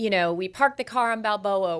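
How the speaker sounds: normal talking voice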